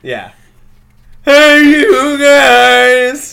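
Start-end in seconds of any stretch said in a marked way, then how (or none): 1.2-3.3 booming, very high yell with "guys" drawn out. Picking Sloth as a fighter in a card game: Sloth from The Goonies voice. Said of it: "this is Sloth from the Goonies".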